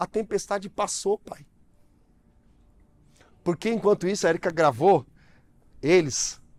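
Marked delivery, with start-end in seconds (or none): 0.0-1.5 grateful words spoken through tears, crying. Retelling how a son came to him after a storm: imitating Theo crying.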